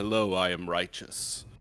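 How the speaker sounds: heavy, deep, imposing, fearsome voice. Describing an imposing character, then voicing them: deeper, boomy voice. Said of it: "you just hear kind of like a deeper voice go".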